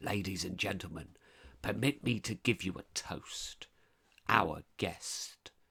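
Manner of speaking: harsh, rasping, abrasive, grating host voice. The host, hammering the table with a knife-handle, toasts his guests in a harsh, grating voice. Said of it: "said in a singularly harsh, grating voice".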